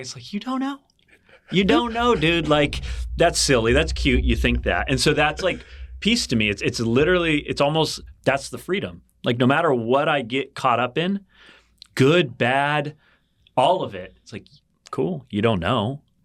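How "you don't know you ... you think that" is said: high, playful, sing-song, teasing trickster voice. Describing the little voice in the back of the head, speaker voices it: voicing a trickery inner voice. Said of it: "this little trickery voice in the back".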